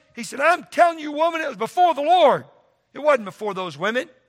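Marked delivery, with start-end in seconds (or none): 0.4-2.5 put-on angry raised voice, pitched up. Acting out David's reply to Michal from verse 21, in a raised voice. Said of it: "he's raised his voice".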